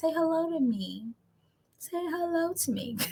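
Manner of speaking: soft, slow, mournful, drawn-out pleading tone. Asking the watching guys to say hello to them, in a sad-sounding plea. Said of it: "That gotta sound sad".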